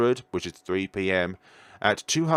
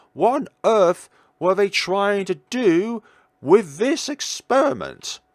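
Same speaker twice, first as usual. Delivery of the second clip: voice breaking, cracking up high; 8 semitones higher, 4 dB louder than usual. Speaker reacting after reading out a profile, voice cracking. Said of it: "I don't know why my voice just cracked there".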